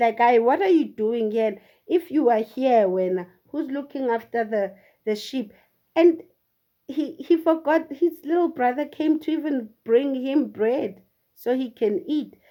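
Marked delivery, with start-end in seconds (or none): none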